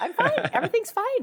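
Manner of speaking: very high shrill voice. Imitating her best friend's mom trying to get over something: a very high voice. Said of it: "her voice goes up ten octaves".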